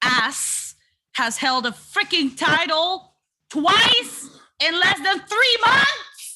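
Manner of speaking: put-on mild half-yell, rising and building as it goes. Ranting about the tag team titles to co-hosts: yelling. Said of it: "you're yelling and you're mic'd".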